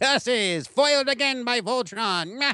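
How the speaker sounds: high, slow, drawn-out cartoon villain voice. Fan recalls a favorite villain's defeat line, in Lotor's Snidely Whiplash voice. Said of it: "kind of that snidely whiplash voice".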